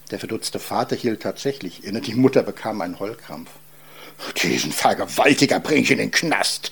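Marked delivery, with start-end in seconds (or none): 4.4-6.7 quivering, trembling voice shaking with rage. The father reacts to his daughter's pregnancy news, trembling with rage. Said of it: "bebte vor Zorn".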